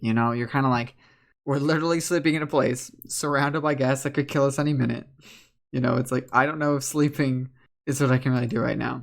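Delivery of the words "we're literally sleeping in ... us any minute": ordinary talk, nothing marked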